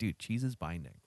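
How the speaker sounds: imitated deadpan flat delivery. Retelling Gary's reply: imitating Gary's deadpan delivery. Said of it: "totally, like, straight face".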